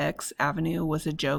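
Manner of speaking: plain reading voice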